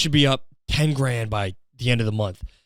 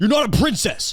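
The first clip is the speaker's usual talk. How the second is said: very high, lost-it angry outburst; 11 semitones higher, 3 dB louder than usual. Acting out a husband who lost his mind at his wife: imitating a man losing it. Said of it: "this guy just fucking lost his mind".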